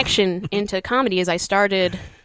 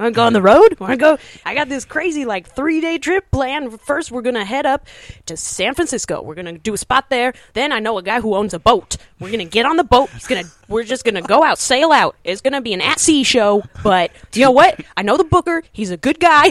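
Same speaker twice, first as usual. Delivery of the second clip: put-on overexcited voice, higher pitch; 3 semitones higher, 4 dB louder than usual. Imitating a comedian pitching a road trip: excited Eric Escobar impression. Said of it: "you're so excited about everything".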